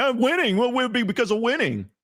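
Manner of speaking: very high-pitched, snarky, put-on sarcastic smart-aleck tone. Answering a viewer's super chat question like a jerk: mock sarcastic answer. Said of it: "I'm gonna be a sarcastic S O B".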